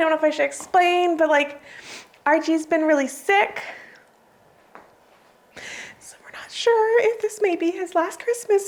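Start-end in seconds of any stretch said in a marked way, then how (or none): 1.2-8.7 overcome with emotion, voice pitched up. Showing Christmas stockings to viewers and explaining one of them: getting emotional. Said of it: "I'm getting so emotional".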